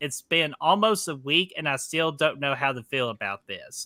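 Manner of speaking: ordinary delivery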